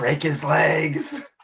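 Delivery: half-whispered stage whisper. Half-whispering a line while invisible in the game: half-whisper. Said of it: "I'm gonna whisper 'cause I'm so invisible".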